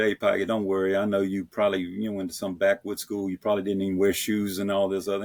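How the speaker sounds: plain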